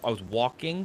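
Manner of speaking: ordinary delivery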